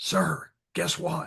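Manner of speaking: soft, hushed, whispery voice. Quoting an Army veteran who spoke to him, retelling a whispery voice. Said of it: "he got this whispery voice".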